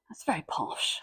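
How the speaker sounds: soft whispered aside.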